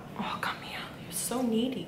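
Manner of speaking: soft, gentle, unvoiced whisper.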